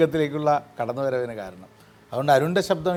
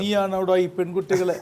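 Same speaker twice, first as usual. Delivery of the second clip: plain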